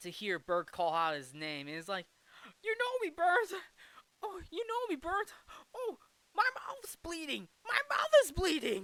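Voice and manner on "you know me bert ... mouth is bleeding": put-on overjoyed, delighted, very high-pitched gush. Retelling a film scene, the speaker voices George answering Bert, delighted George voice. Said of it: "And George is so delighted".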